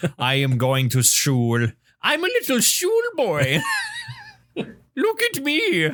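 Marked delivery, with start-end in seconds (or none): 2.0-5.9 very high, sing-song, swooping cartoon voice. Joking about pronouncing school as shul, A Bug's Life caterpillar voice. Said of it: "I sound like the caterpillar from from A Bug's Life".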